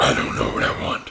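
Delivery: whispery, unhinged comic-book villain voice. Imitating partner's other voice: crazy Spider-Man villain voice. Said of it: "she sounds like this crazy Spider-Man villain".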